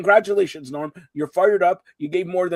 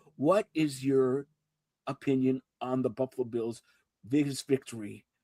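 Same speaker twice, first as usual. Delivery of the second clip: hushed, barely audible, very quiet, low half-whisper; 6 semitones lower, 10 dB quieter than usual. Told to stop yelling and try half-whispering, the speaker asks a question: half-whispering. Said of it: "I'm whispering to you now".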